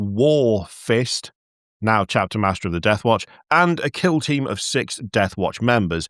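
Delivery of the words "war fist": slow, overpronounced, every sound exaggerated. Narrating a story, slowing down on the name: slow, overpronounced 'War Fist'. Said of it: "I'm going to slow it down every time I get to his name and just really overpronounce it".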